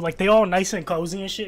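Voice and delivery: ordinary talk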